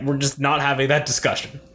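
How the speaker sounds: ordinary talk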